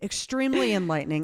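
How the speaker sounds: ordinary talk, nothing marked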